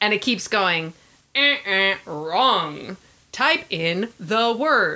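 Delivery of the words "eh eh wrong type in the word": retro 80s electronic talking-toy voice. Telling about a man typing into a clown toy, voicing the toy in an 80s electronic voice. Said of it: "that 80s electronic voice".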